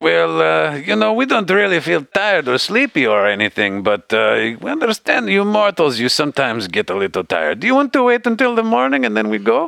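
very high-pitched, swooping sing-song voice. Voicing Jacques, a talking sideboard, offering the party a rest: Jacques the sideboard. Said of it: "Jacques is like".

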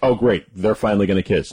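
ordinary talk, nothing marked

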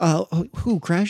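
barely audible, slow, very quiet mumble. Retelling a movie moment from the background: imitating a very quiet question. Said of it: "very quietly in the background".

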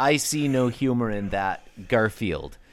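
normal talking voice

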